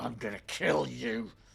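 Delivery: rough, creaky voice forced through gritted teeth. Player voices their character as it starts to burn: through gritted teeth. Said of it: "he's through gritted teeth".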